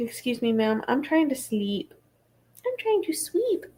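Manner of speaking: snooty, sarcastic, sassy, put-upon cat voice. Taking a break from reading, voicing her glaring pet, sassy Kovu voice. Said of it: "He's so sassy".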